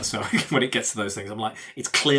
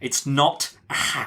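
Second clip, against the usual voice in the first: put-on irate outburst, pitched higher; 3 semitones higher than usual. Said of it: "I was irate".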